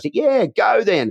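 mock very high-pitched yell. Retelling an audience member's call-out during the show: imitating someone yelling. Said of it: "someone yells".

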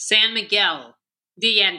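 heavy, thick Americanized accent. Asked to say it again for U.S. listeners: thick gringo accent. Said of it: "Can you say that in like thick gringo accent".

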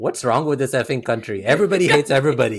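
put-on very heavy Indian accent, loud and fast. Recounting what a store owner says in a scene with Costigan: thick Indian accent. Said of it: "in a very thick Indian accent".

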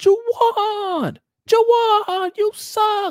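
play-acted very high, very slow, drawn-out jeering yell. Behind the other team's bench, imitating Donnie yelling at a player. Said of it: "Donnie was just yelling".

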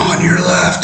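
put-on screaming. Recounting passing a bunch of people who were all screaming: imitating people screaming. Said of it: "everybody's screaming".

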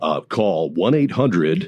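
on-air radio announcer voice. Joking on air in the middle of a story, radio voice. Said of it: "got my radio voice out there".

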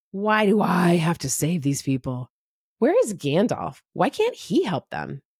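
put-on grumbling under the breath. Recalling a story's reluctant hero: Bilbo grumbling under his breath. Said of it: "Bilbo grumbling under his breath".

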